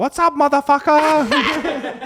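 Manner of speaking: very high-pitched put-on alien voice. Joking about aliens greeting the comedians: put-on alien voice. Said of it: "That's how all the aliens talk".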